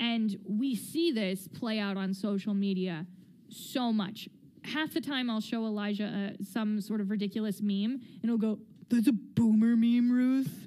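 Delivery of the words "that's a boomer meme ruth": raised voice with a retorting tone. Quoting Elijah's reply to a meme she showed him, Elijah impression. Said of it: "because this is what I sound like because I'm Elijah".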